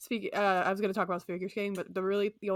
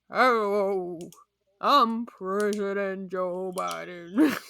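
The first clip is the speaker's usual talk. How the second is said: loud, horse-like voice speaking words; 6 dB louder than usual. A podcast host attempts a rendition of horses speaking: Joe Biden as a talking horse. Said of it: "impersonations of horses if they could speak".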